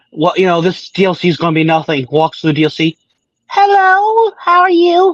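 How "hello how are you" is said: put-on very high, slow little-kid voice. Describing a joke animation about the DLC, doing a baby voice. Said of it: "like baby voice".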